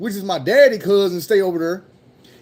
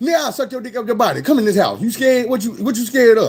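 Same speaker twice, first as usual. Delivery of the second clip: mock blunt, brazen, forward tone. Describing people hanging around the front door, imitating a brazen propositioner. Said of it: "They gonna tell you right up".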